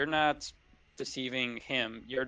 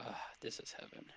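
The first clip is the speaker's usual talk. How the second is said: mumbling to himself under breath, quieter; 14 dB quieter than usual. Voicing a relaxed goblin boss muttering in a hot spring: muttered under his breath. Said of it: "in the underbreath of his, of his tone".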